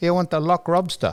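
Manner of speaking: put-on Chinese accent. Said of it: "I could do the accent".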